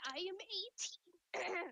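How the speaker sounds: voice cracks high on "eighteen". Telling a conversation partner about themselves, voice cracking. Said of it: "Sorry, my voice cracked".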